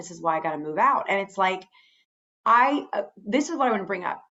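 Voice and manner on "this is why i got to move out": mock muttering under breath, lower pitch. Recounting what she said in the middle of the story, retelling a mutter under breath. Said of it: "she says under her breath".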